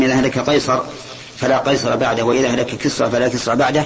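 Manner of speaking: plain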